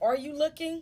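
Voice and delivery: put-on suspicious tone. Retelling a caller's suspicious question on the phone: imitating a questioning tone. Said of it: "Like, questioning".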